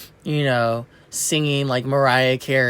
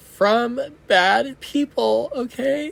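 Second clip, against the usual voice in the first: very high, teary, crying voice; 11 semitones higher than usual. Addressing young listeners: crying. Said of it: "I'm just really and I'm crying".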